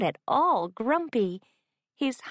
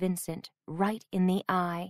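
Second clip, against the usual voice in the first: plain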